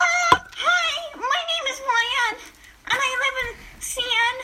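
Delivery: cringy, very high, drawn-out put-on voice. Reading a bit of a story aloud, doing a cringy YN voice. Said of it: "I want to have that really cringy YN voice".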